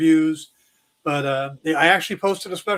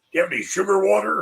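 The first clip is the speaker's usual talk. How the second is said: odd, very specific Southern drawl creeping in; 2 semitones higher than usual.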